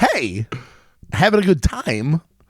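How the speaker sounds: very slow, stretched-out, casual delivery. Asked to do an impression fast: Christopher Walken voice. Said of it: "Christopher Walken".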